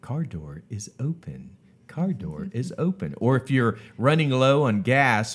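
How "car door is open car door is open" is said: small, automated in-car alert lady voice. Speaker recalling an old car's built-in warnings, imitating the car's talking voice. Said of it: "the little lady's voice would say".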